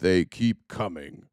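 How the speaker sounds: very deep, low, menacing, ominous narrator voiceover. Recalling anti-immigrant tv ads, the speaker mimics their narrator: ominous narrator voice. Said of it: "That's my narrator voice".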